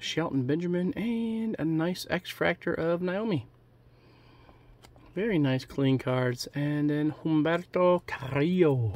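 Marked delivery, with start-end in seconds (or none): 7.2-9.0 put-on, best-guess Spanish pronunciation. Reading out wrestling cards, guessing how to say a name, best-guess Spanish accent. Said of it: "putting my best Spanish accent on it".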